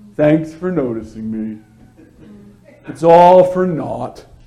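dropped low in pitch, deadpan. Contrasting joy with moping around, quoting Eeyore: deadpan Eeyore voice. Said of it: "With his deadpan".

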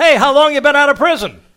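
very loud, very high shout. Retelling a man greeting an old friend in front of everyone at a carryout: loud voice. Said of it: "in a nice loud voice in front of everybody".

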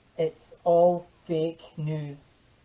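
acted, heavy, tongue-in-cheek sarcasm, slow drawl. Quoting a line about the mainstream news, sarcastic tone. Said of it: "I'm being sarcastic here".

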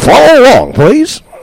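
very high, put-on radio-announcer voice. Speaker leading listeners through a Bible passage, showing off his radio broadcaster voice. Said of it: "That's my radio voice".

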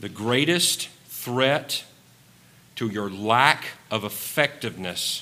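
slow, unhurried delivery. Making a point in a sermon, saying it slowly. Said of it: "I'm going to say this slow".

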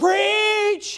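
emphasis landing on preach. A preacher shows how preachers like to read the verse: stress on 'preach'. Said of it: "Preachers like to read it like this".

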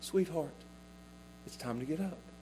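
tender, soft, gentle whisper. Retelling how he wakes her, saying it in a soft voice. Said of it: "he says it with a soft voice".

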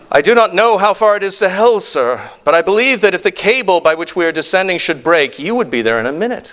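put-on Irish accent. Telling an anecdote, voicing a miner answering the chairman of the board, irish accent. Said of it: "I'm doing an Irish accent now".

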